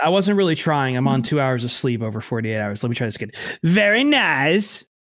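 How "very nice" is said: pitched up and stretched out, nice. Trying the line again after the first try was called the worst, bad Borat impression. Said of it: "worst Borat impression I've ever heard".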